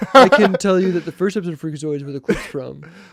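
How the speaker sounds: loud, snide, derisive, smug know-it-all parody voice. Teasing another speaker about knowing the first Freakazoid episode: mocking imitation of Sam. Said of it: "is that what makes you intelligent, Sam? Like".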